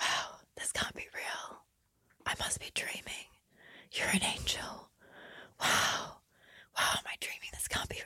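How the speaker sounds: creepy, breathless whisper, very close.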